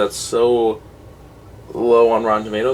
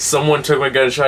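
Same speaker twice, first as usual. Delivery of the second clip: ordinary delivery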